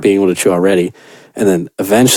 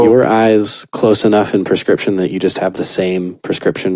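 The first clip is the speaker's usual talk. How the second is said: plain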